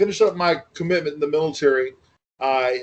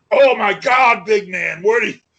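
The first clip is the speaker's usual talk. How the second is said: put-on wild, over-excited voice, high and loud; 7 semitones higher, 5 dB louder than usual. Retelling a first meeting with Ox, who went nuts: imitating Ox going nuts. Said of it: "he just went nuts with that voice".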